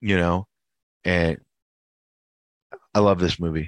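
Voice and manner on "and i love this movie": choked up, close to tears. Telling another speaker how much a movie means: emotional, close to tears. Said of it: "He's emotional".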